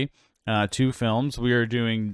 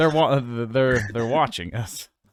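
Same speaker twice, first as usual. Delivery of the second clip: plain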